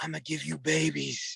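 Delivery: slow, hushed stage whisper, very close to the ear. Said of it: "I'm gonna whisper in your ear".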